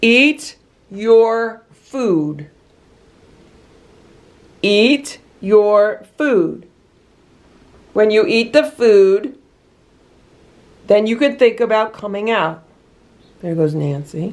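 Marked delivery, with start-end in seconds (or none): 0.0-12.6 firm, slow voice with power behind it. Speaking to one who is only smelling her food, in a firm voice. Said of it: "you need to speak in a firm voice".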